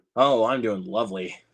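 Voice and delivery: sarcastic tone. Answering how they are doing: sarcastic. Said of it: "I'm being pretty, pretty sarcastic".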